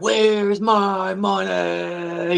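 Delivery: high, furious, demanding yell. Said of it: "He's fucking yelling at the guy".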